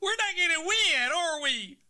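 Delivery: high, loud mock worried whine.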